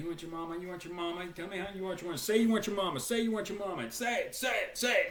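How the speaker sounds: mock, relentless, hammering, screaming drill-instructor tirade. Retelling how drill instructors screamed at a crying recruit: imitating drill instructors screaming. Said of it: "they're just screaming at him again".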